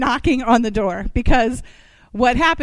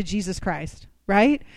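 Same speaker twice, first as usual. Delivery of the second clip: normal talking voice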